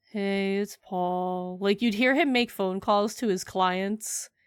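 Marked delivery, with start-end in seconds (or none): 0.2-1.6 put-on, extremely depressed, gloomy voice. Act out Paul on the phone to his clients, imitating depressed Paul. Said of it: "most depressed man on earth... he would say it like that".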